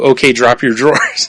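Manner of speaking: ordinary delivery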